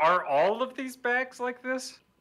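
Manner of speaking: high, loud, slow calling-out voice.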